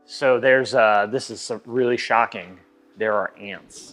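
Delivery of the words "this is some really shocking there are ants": sarcasm laid on thick, heavy and dripping. Pointing out ants found inside the car: heavy sarcasm. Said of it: "with all the sarcasm I could muster".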